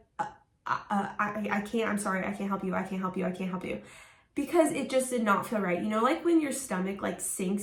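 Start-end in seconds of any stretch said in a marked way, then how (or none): 0.2-3.8 acted-out, panicked, freaking-out voice. Speaker retells refusing a man who begged for help, retelling a panicked refusal. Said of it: "And I freaked out".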